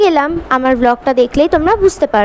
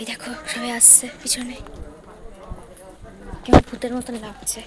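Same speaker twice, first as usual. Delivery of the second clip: very soft, hushed talk. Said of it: "একদম আস্তে আস্তে কথা বলছি আমি".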